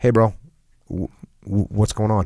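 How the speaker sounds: mellow, calm voice. Recounting walking up to the person holding up the troop, retelling a mellow voice. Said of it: "Just in the most mellow voice".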